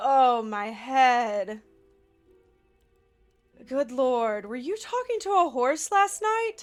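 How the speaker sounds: groggy, sleepy, just-woken-up voice. Voicing a character who sits up like a zombie on waking: groggy, just-woken-up voice. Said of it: "sits up like a zombie and is just like".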